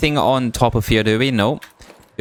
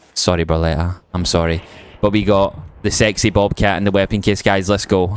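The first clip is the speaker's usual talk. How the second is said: usual speaking voice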